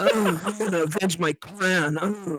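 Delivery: mock, strained anime-style voice. A speaker mocks how Sasuke sounds in the Naruto anime: mock-straining Sasuke impression. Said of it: "sounds like he needs to take a shit, but he needs to hold it in".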